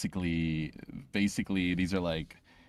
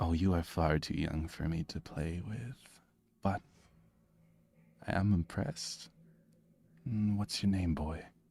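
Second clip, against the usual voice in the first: soft, hushed, sultry delivery; 6 dB quieter than usual. Voicing a hooded figure in leather armor, answering a player: sultry voice, talking softly. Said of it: "a sort of sultry voice kind of responds".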